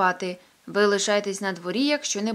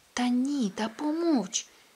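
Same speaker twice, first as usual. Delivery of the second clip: slow, unhurried, hushed whisper; 3 semitones higher, 3 dB quieter than usual. Reading a story, a man hushes his companion: whispering. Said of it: "шепнув Петсон".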